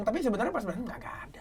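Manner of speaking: quick whispered aside.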